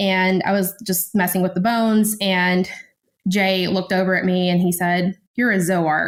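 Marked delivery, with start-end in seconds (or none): 5.3-6.1 pointed, accusing tone. Retelling what Jay said on seeing bones being handled: imitating Jay's accusatory tone. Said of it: "accusatory way".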